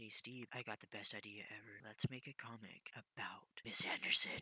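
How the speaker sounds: very quiet, barely audible whisper. Retelling what one student said to another in math class: imitating a whisper. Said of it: "he whispers".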